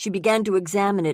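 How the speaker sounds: ordinary delivery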